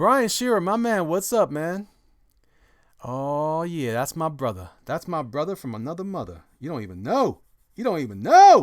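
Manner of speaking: very loud, animated, excited shouting. Speaker greets someone he calls my man, yelling excitedly. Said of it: "Sorry for yelling".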